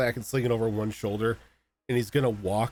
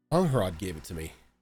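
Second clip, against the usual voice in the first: sheepish, a little embarrassed, much lower pitch; 3 semitones lower than usual. A player speaks in character just after his character caused a scene, a little embarrassed. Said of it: "sort of like a little embarrassed".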